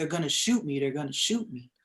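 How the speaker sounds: put-on panicked, pleading voice. Retelling how a frightened person hiding on a stairwell reacted: imitating someone panicking. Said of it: "he just started panicking".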